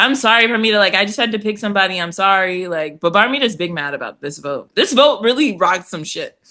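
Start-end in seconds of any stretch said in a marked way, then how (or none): 0.0-2.7 insincere, unapologetic tone, not genuinely sorry. Retelling a scene where Kenzie apologizes to Parmita: imitating Kenzie's insincere apology. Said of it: "she doesn't really sound sorry".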